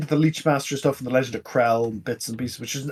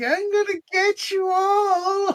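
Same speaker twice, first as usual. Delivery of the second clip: sly, weaselly villain voice, very high pitched. Describing the Voyager holodeck villain, the speaker imitates his weaselly villain voice. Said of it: "He's got a Weasley voice".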